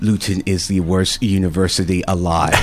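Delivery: normal talking voice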